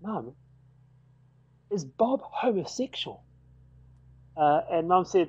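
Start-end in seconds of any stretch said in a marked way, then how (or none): 0.0-3.2 soft, slow, hushed whisper. Retelling asking mum about a visiting priest: retelling a whisper. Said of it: "I asked Mum in a whisper".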